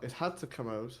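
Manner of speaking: slight Irish accent, noticeable on "out". Answering what his highlight of the year was, sounding slightly Irish. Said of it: "Why are you sounding Irish all of".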